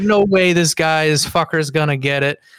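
ordinary delivery

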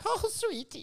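British granny voice, pitched way up. Put on the spot to speak English on the show, the speaker does a British grandma voice. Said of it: "I like to talk in, in, in British, like a grandma".

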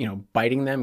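usual speaking voice

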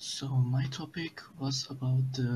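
hushed, near-silent whisper. Caller answering the host's question about tonight's topic, whispering very quietly. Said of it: "You got even quieter".

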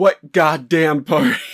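put-on full-throated screaming yell. Retelling a movie scene where the chief screams into the void: imitating someone screaming. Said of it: "he's just screaming into the void".

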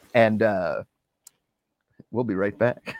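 flirty

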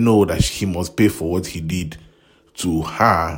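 ordinary talk, nothing marked

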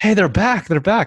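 very high-pitched, urgent, acted-out shout. Retelling how the dad came back to the car: imitating someone yelling. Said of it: "he's yelling".

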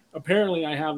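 normal talking voice

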